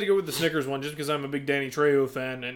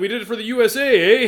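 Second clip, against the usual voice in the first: high, loud put-on Canadian accent, leaning on eh; 7 semitones higher, 7 dB louder than usual. Retelling a Regular Show scene about a disqualified team, imitating a Canadian accent. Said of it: "he's like".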